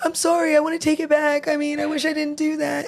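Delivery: put-on very high, weepy, tearful sobbing voice. Retelling a subordinate's regret after reporting to HR: imitating someone crying. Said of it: "now she's over here crying".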